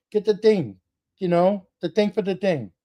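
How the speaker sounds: heavy, put-on Portuguese accent. Recalling dad in the garage, imitating dad's heavy portuguese accent. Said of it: "he had a heavy Portuguese accent".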